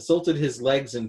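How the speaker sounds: ordinary delivery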